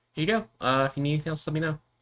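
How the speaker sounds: upbeat, perky voice. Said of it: "kind of peppy for a bartender".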